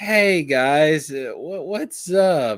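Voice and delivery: slow, loud fake-drunk voice. Joking about showing up to the stream drunk: pretend drunk. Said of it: "I'll just come into the stream drunk".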